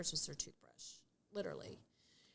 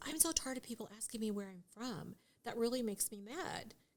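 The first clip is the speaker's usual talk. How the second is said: ordinary delivery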